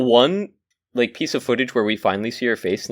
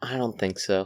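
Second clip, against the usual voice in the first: sad, quieter; 3 semitones lower, 8 dB quieter than usual. Asked if they have anything more to say about the movie, sad. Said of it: "You sound so sad about it".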